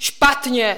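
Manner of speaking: yelling out. The troll answers the children, shouted. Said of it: "vykřikl troll".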